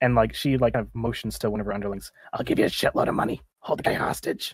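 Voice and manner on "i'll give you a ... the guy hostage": rough, creaky, raspy villain voice. Narrator voicing a woman ordering one of her underlings, in a raspy gang leader voice. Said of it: "She rasps out".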